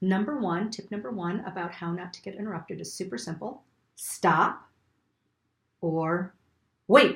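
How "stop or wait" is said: slightly raised, attention-grabbing voice, a notch louder. Giving a tip on not getting interrupted; a little louder. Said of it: "I said that a little bit louder".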